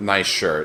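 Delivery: ordinary talk, nothing marked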